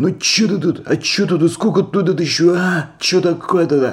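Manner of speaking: rude, aggressive convict-style voice. Retelling how a man rudely confronted him, mock-aggressive thuggish manner. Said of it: "конкретно по-зэковски, по-быдлячьи, вот так вот".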